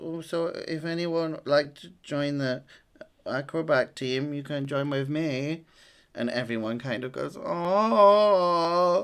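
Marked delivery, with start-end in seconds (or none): 0.0-5.6 very cute, sweet, adorable little puppy voice. Retelling a story, speaking as the small puppy in a very cute voice. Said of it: "the dog says in a very cute voice".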